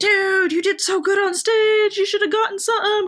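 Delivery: gushing, effusive tone.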